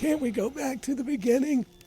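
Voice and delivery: very high, squeaky, bad cartoon-bear voice. Retelling the fireworks ending line: terrible Winnie the Pooh imitation. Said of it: "That's a terrible Winnie the Pooh imitation".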